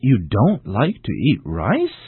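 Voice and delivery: slow, with rising pitch on "rice". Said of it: "use a rising intonation with a statement".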